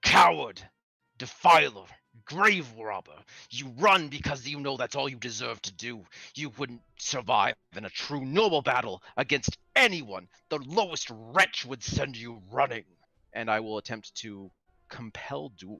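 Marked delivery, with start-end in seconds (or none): 0.0-12.9 growling, dragon-tinged bellow, taunting. Shouting at a fleeing foe in character: shout laced with dragon growl. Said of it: "I will shout at him, and my voice will be laced with, like, this growl of a dragon".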